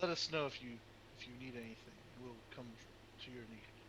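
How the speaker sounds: hushed, half-whispered voice. Telling the scouting rogue to call if needed: half-whispering in character. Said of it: "I whisper to him".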